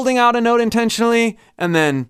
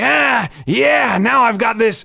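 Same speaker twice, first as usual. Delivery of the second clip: put-on creaky elderly man sound; 2 semitones higher than usual. Speaker demonstrates a voice technique, using a nasal old man voice. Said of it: "nasal old man kind of sound".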